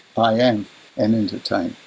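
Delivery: clear pause hanging after "I am". Retelling how someone said he was an entertainer: pause after I am. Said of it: "he said it like this".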